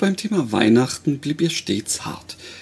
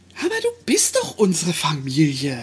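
prompt, insistent tone. Narrator reads a woman's reply to the narrator, insisting. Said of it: "beharrte sie prompt".

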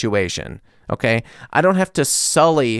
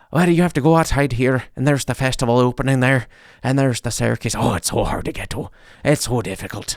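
put-on Irish-sounding voice with Irish accent; 2 semitones lower, 4 dB quieter than usual. Speaker quoting a man they asked for directions, imitating an Irish accent. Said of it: "but he sounded Irish".

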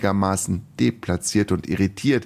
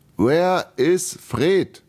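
slow, pitched up, each syllable exaggerated and over-enunciated; 8 semitones higher, 3 dB louder than usual. Langenus speaks to the frightened Irina, over-enunciating as to a slow child. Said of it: "begann er langsam und betonte dabei jede Silbe etwas übertrieben".

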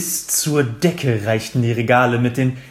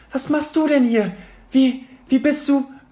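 very high, piercing, shrill shrieking; 14 semitones higher than usual. Narrator voicing hermine calling to harry, shrieking. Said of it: "kreischte Hermine".

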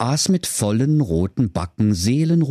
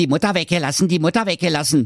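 snippy, snide mocking imitation; 5 semitones higher than usual. A brother mockingly repeats his brother's words back at him, snippy mocking imitation. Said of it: "äffte der Wilhelm Grimm schnippisch seinen Bruder nach".

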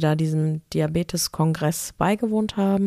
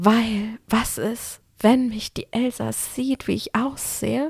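put-on high, slow, eager, excited little girl voice; 5 semitones higher than usual. Retelling what an excited girl behind said to her mother: imitating an excited little girl. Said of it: "die war ganz aufgeregt".

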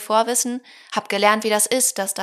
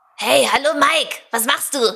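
young, little anime cartoon boy voice; 4 semitones higher, 4 dB louder than usual. Asked to show off a voice he has ready, a little boy anime voice. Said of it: "kleine Jungs-Anime-Stimme".

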